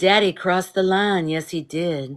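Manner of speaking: put-on relaxing online video-host voice. Imitating a political commentary YouTuber's voice: imitating Christina Talks Tea. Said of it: "I love her voice".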